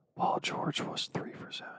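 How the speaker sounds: soft, unvoiced whisper. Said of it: "Why are you whispering?".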